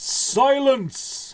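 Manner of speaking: thunderous, booming giant shout, very high-pitched. Narrator voicing giants who yell together at travelers, a booming yell. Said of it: "Together they yell boomingly".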